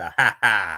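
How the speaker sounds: slow, low put-on laugh. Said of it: "Me with the Jesse laugh".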